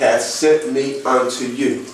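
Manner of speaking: ordinary delivery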